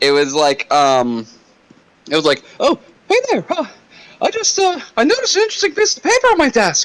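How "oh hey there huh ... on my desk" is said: very high, squeaky voice. Recalling a bit with a buddy from working at Domino's, in Mickey Mouse voice. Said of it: "I was able to use the voice".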